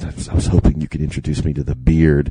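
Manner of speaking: whispering. Retelling what a woman whispered in the speaker's ear: imitating a whisper. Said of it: "whispers in my ear".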